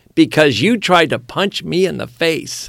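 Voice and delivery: mild, called-out voice. Retelling an arrest scene, imitating a bystander yelling out. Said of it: "The guy behind me yells out".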